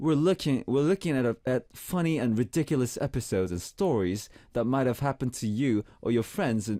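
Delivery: read-aloud script delivery in British accent. Host reads the show's script aloud, reading in a British accent. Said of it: "read this in British accent".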